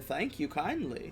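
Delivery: put-on hushed, very quiet, soft old woman voice. As Madame Ava, heard from behind before walking into the camp, speak in an old woman's voice. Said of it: "an old woman's voice say".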